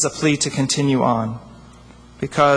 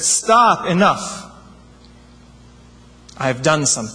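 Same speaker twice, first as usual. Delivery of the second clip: put-on booming voice. In a joke, God finally answers a praying rabbi, booming voice of God. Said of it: "God let out a booming voice from the heavens".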